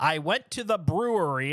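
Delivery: slow, overdone, exaggerated Midwestern accent. Speaker shows how a sentence would sound otherwise, in an exaggerated Midwest accent. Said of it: "dude, you don't talk like that".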